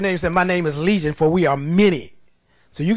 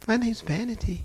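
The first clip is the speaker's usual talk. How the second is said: mock gentle, sweet and demure voice; 4 semitones higher, 9 dB quieter than usual. Retelling a demon answering when asked its name: imitating a sweet, demure voice. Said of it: "She sounded just as sweet and demure".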